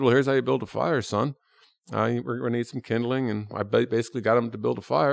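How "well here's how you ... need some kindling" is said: acted dry, flat, matter-of-fact deadpan delivery. Recalling how he redid his first scene, the speaker repeats his line: retelling a dry delivery. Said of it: "I basically just sort of dryly said".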